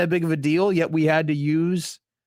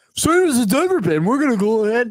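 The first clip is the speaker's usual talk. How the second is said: exaggerated, deeper dumb guy voice; 7 semitones higher, 4 dB louder than usual. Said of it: "I'd like to see you commit deeper".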